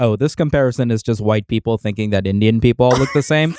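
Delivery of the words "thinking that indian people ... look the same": ordinary talk, nothing marked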